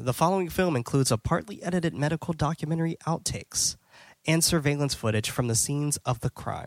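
ordinary delivery

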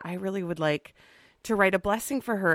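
plain

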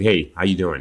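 slight put-on New Jersey accent. Showing what a speaker's little head nod is almost like, sound a little New Jersey. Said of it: "a little New Jersey thing going on there".

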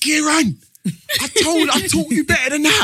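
high-pitched, loud, scolding shout. Retelling shouting at a teammate who keeps going offside: retelling shouting at a teammate. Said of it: "I can hear him shouting".

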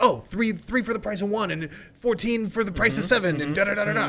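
put-on rapid talking. Imagining whoever swindled the other speaker at a carnival, mimicking fast talking. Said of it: "they were just talking so fast".

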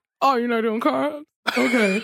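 put-on mouth-full voice. Recalling passing food around at a meal, retelling speaking with mouth full. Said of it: "with a mouthful of pasta".

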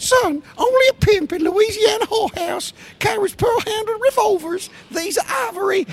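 very high-pitched, squeaky voice. Quoting a line someone wrote in about: squeaky Patton voice. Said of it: "I'll do his voice".

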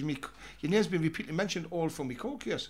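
normal talking voice

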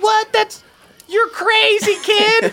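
put-on amazed, high, excited kid chorus voices.

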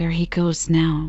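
ordinary delivery, nothing marked

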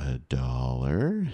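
very slow, very low, drawn out, condescending. Retelling what a woman at the dollar store said to the speaker, mimicking really slow speech. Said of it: "starts speaking really slowly".

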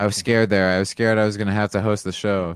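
plain

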